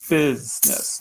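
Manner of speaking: long stressed first syllable of business. Word stress lesson, saying business: lengthened stressed first syllable 'bus'. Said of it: "Notice I'm lengthening that first syllable".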